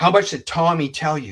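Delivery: mock furious, loud, livid barking shout. Retelling a phone call from a detective: imitating a livid loud detective. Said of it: "he's very livid, and he's very loud".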